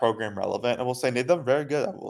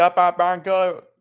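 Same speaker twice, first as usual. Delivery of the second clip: very slow, thick put-on Cajun Louisiana Bayou drawl; 6 semitones higher, 3 dB louder than usual. Imitating a politician's strong Bayou accent after describing it: imitating Jeff Landry's Cajun accent. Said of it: "he's got a strong Bayou accent".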